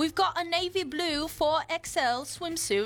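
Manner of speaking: put-on British accent. Reading a classified ad aloud on a bet, in a British accent. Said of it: "read this in a British accent".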